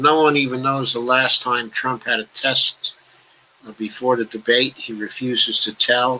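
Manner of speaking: ordinary delivery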